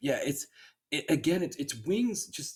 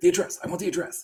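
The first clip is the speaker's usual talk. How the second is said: forceful, pushy, aggressive insistent tone; 4 semitones higher, 4 dB louder than usual. Retelling a movie scene, demanding an address from an assistant: imitating an aggressive demand. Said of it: "very aggressive Wings way".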